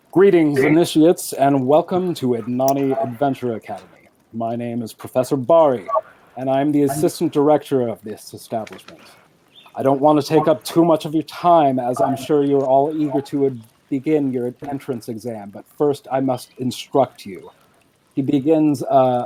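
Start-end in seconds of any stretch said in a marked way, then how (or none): 0.2-17.5 formal welcoming speech voice. Voicing the assistant director welcoming initiates: Professor Bari voice. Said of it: "I have not tried to workshop this voice before".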